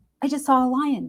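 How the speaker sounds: mock heightened excitement and awe, high-pitched cry. Retelling what she screamed out as they drove through the neighborhood: imitating excited awe. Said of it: "with this like tone of heightened excitement and awe".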